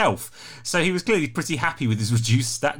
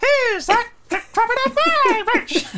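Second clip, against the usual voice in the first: tiny, much higher character voice; 5 dB louder than usual. Showing Tom how a small character would say his bridge line, in a small voice. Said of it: "he's small, so his voice will clearly be".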